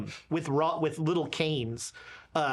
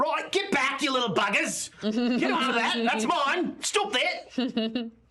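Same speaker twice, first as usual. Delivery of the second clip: strong put-on Australian accent, pitched up; 8 semitones higher than usual. Voicing a priest shooing kids away: Australian accent. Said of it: "in a very Australian way".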